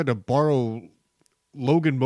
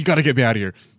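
loud, frantic, desperate, panicked voice; 5 dB louder than usual. Retelling a friend locked inside a tent: imitating a panicked voice. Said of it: "the panic in his voice was so funny".

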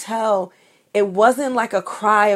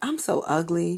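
imitated nonchalant little girl, offhand and mock-casual; 3 semitones lower, 7 dB quieter than usual. Retelling a little girl's remark from a Facebook Live, imitating her nonchalance. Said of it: "she says it so nonchalantly".

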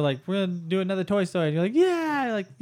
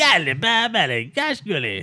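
put-on cartoon dog character voice. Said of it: "You curse like the Slinky Dog".

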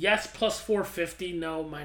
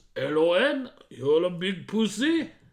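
very slow, loud, fake French accent; 7 dB louder than usual. Asked about their French accent, demonstrating how it goes: French accent. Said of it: "My French accent goes like this".

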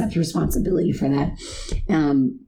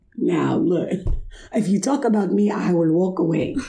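voice speaking as a dog; 2 semitones higher than usual. Speaking for Bruce, who sits beside the other speaker: Bruce's voice. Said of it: "That's Bruce's voice".

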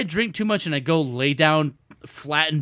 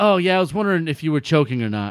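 put-on flat, deadpan voice with no emotion. Retelling her reply about whether the speaker was choking, imitating her flat, emotionless voice. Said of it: "No emotion in her voice".

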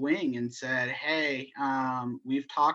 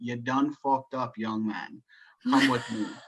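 put-on Scottish accent in an older man's voice. Speaker retells an older leatherman coming up to him, in Master Wu's Scottish accent. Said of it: "said in his Scottish accent".

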